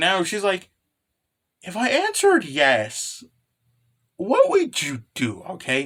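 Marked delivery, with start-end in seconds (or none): 1.6-5.4 slow, embarrassed, swooping, drawn-out delivery. Retelling a scene between Jessica-chan and Nessa, imitating Jessica-chan's embarrassed surprise. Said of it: "obviously surprised and kind of embarrassed".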